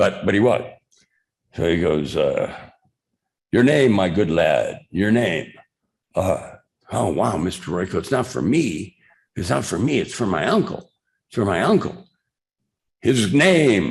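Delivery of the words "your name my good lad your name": put-on slipping into a half-British accent. Retelling Royko asking for a name, in a semi-British accent. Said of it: "speak in a semi-British accent".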